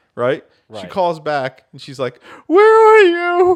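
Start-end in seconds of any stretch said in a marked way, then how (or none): 2.5-3.6 put-on very high, very loud drunken voice. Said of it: "this obvious fucking drunk girl".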